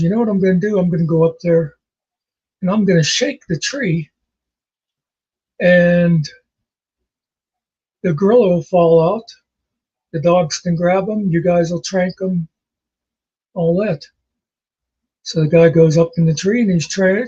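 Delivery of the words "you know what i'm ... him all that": ordinary talk, nothing marked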